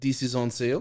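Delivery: put-on French-accented voice. Retelling what a french client said at work: imitating a french guy's accent. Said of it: "he was this French guy, and he was like".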